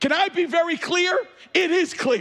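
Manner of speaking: yelling, pitched high. Speaking to an audience that includes visitors, yelling. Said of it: "if you're wondering why I'm yelling".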